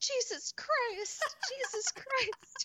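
put-on child screaming, very high and drawn out. Retelling a child jumping up and down: imitating a child yelling loudly. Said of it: "yelling at the top of her lungs".

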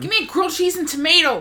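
put-on very high-pitched voice with West Ohio accent. Recapping a story, quoting Hope Gregory yelling at her dad in an Ohio accent. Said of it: "the Ohio West accent".

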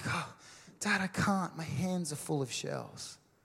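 put-on fed-up, exasperated child's tone. Retelling a story, the speaker quotes a kid answering his dad, imitating an exasperated kid. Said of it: "And the kid's like exasperated".

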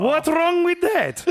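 put-on very high Polish accent with rolled r. Repeating an actress's line, slightly rolled r like a polish grandmother. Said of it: "she kind of rolls her R a little bit, and she sounds exactly like my Polish grandmother".

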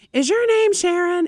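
very high, yelled-out call. Retelling how a woman in an SUV called out to candidates, retelling a yell out. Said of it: "she yells out".

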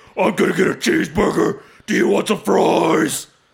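mock death metal growl voice. Joking that metal singers don't talk this way: death metal growl voice. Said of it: "death metal dudes walk around going like".

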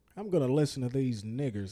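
put-on Southern American accent. Saying he will listen to a hip hop show, in a put-on Southern accent. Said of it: "I don't know why I'm doing a southern accent".

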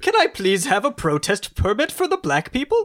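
mock posh English accent, wide swooping pitch.

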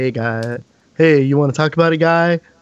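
acted, slightly creepy, would-be cool uncle voice. Describing sitting backwards in the chair, acting out the cool uncle voice. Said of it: "like the cool uncle".

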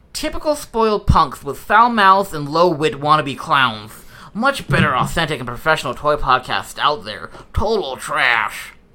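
loud, squawking put-on cartoon duck voice. Speaker reads out a one-star review of their podcast, in a Daffy Duck impression. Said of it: "that was a really good Daffy Duck impression".

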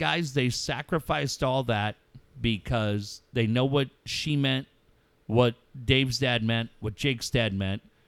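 ordinary delivery

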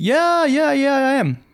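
put-on Canadian accent, very high-pitched. Retelling what an Uber driver said, imitating a Canadian accent. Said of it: "I apologize for the Canadian accent".

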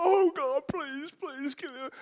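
acted very high, desperate, pleading cry. Speaker retelling how their sister cried out for prayer, imitating sister crying out. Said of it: "she's crying".

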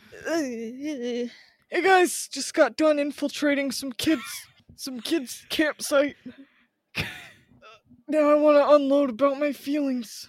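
put-on goat man character voice. Speaker shows on the podcast what he sounds like: goat man voice. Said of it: "I kind of like that goat man voice".

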